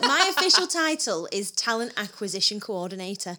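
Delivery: ordinary delivery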